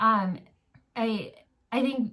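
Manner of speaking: stammering over words. Starting to tell about her sister's homeschooling, the speaker stumbles, stuttering. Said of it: "sorry, I'm stuttering".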